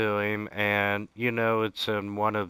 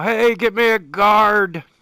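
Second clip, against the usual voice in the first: yelling, much higher, louder, slower; 11 semitones higher, 10 dB louder than usual. Voicing a character who calls for a guard, yelling down the hall. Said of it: "he yells down the hall".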